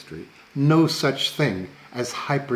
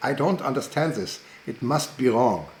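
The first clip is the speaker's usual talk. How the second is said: put-on strong, laid-on German accent. Quoting a scientist's remark in seminars: Max Delbruck strong German accent. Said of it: "in a strong German accent".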